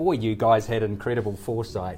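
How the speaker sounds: normal talking voice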